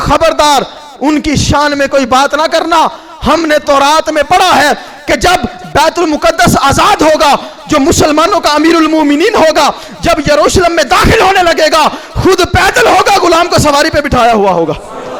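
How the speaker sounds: stern, high, rising shout.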